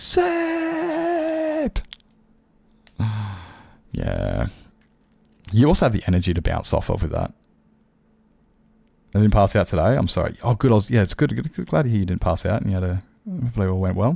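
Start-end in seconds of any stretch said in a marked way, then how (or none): 0.0-1.8 very high, giddy, excited squeal. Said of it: "Get all giddy".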